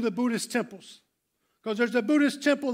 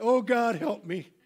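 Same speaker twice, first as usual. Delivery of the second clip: put-on, muttered quietly under the breath. Retelling a prayer at the edge of a big stage: imitating praying under breath. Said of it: "I'm praying under my breath".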